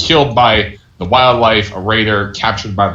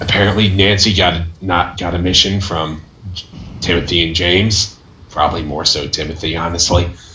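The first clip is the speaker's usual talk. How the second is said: whispering quietly, hushed; 3 semitones lower than usual. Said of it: "whisper real quietly".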